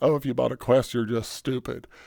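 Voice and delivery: ordinary talk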